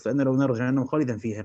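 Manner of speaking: ordinary delivery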